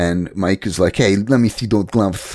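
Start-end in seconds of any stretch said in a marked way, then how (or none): 1.0-2.4 mock nasal prizefighter voice. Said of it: "He's so nasally".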